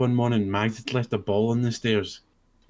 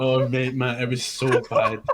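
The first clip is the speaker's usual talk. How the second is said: usual speaking voice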